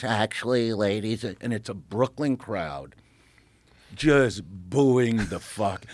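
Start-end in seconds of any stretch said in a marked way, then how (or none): 0.0-1.2 put-on old comedian voice, fully committed. Retelling a stand-up set, doing the Jerry Lewis voice. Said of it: "doing the Jerry Lewis".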